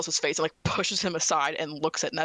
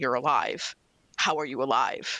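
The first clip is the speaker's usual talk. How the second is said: slow whisper, swelling louder bit by bit; 3 semitones lower than usual. A woman inspecting a man's face for injuries, whispering more loudly each time. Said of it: "keeps like whispering and keeps getting a little bit louder".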